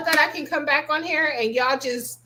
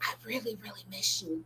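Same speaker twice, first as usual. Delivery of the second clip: very quiet, breathy, barely audible whisper; 5 semitones lower, 16 dB quieter than usual. Retelling a voicemail from a private number: imitating a whispered voicemail. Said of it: "They're whispering".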